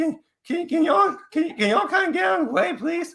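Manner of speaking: very high, anything-but-manly squeaky voice. Acting out a runner forty miles into an ultramarathon, imitating an unmanly voice. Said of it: "instead of the manly voice that you think should come".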